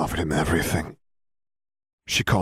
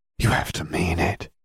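plain

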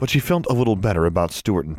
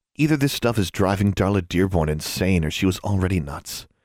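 plain

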